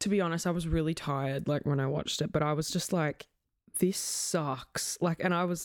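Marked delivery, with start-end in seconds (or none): none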